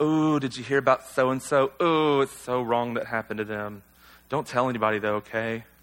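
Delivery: low, soft, pious-sounding gossip voice.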